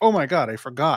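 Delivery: normal talking voice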